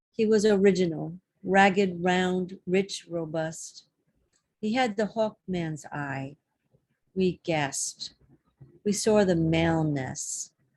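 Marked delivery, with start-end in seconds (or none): none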